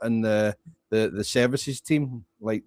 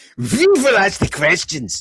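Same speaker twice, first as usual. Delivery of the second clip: loud, swooping German-accented English; 7 semitones higher, 7 dB louder than usual. Showing how they would talk the whole time: german accent. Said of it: "you would be talking like this the whole time".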